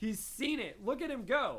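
usual speaking voice

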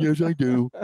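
put-on numb-mouthed speech, high-pitched and slurred. Retelling a Seinfeld scene, imitating Kramer with a numb Novocaine mouth. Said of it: "he had Novocaine all in his mouth".

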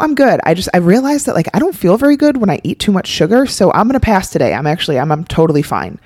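relaxed, self-assured, totally fine, confident tone. Showing another way to turn down cake: sounding totally confident and fine. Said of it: "they seem totally confident".

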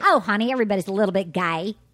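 put-on heavy Southern American accent, laid on thick. Showing off a character's voice, speak in a thick Southern accent. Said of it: "I have a thick Southern accent".

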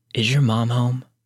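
put-on dry near-whisper. Retelling what a stranger at the door asked: imitating a dry near-whisper. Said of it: "he replied in this dry, almost whisper".

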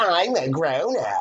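oily, smarmy, put-on little-kid voice. Imitating a father eating out of the ice cream bowl, in a smarmy fake kid voice. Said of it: "in like this really smarmy, like fake little kid accent".

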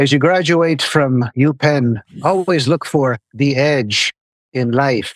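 clumsy, hammed-up, bad put-on Irish accent. Retelling a graduation day speaker at UPenn: bad Irish Shibano impression. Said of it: "I'll do a shitty Irish Shibano accent".

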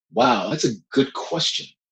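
plain

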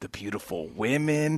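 soft, secretive half-whisper, very quiet. Speaker describing a fight weekend to a listener: half-whispering. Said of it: "Why are you whispering that part?".

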